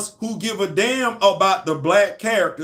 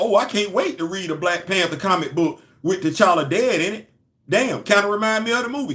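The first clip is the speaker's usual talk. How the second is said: plain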